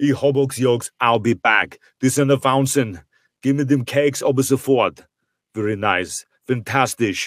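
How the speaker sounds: put-on speaking with Austrian accent. Answering a request to do Arnold in Austrian: Arnold Schwarzenegger voice in Austrian. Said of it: "do Arnold in Austrian?".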